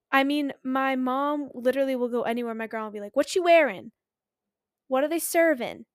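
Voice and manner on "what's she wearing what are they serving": put-on South Philly accent, much higher. Speaker quoting the speaker's grandma at a south philly funeral, bad south philly accent. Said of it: "I don't know how to do the accent very well".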